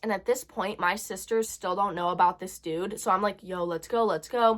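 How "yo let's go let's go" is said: normal talking voice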